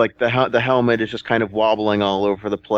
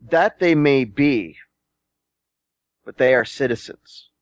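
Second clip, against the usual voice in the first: calling back, voice raised to carry; 3 semitones higher than usual. Narrating a character who shouts back at a giantess, shouting back. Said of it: "Guillermo shouts back at her".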